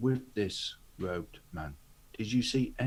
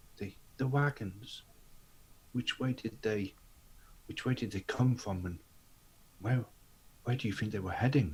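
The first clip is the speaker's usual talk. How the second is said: hushed tone with halting, hesitant delivery. As a man finishes speaking, [name] questions him in a hushed tone. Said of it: "in a hushed tone".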